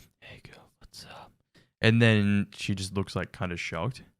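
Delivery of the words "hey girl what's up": very quiet, breathy, secretive whisper. Retelling what a character in an ad just did: imitating a whisper. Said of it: "whispered something like".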